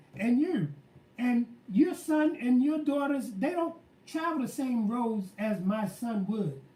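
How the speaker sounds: usual speaking voice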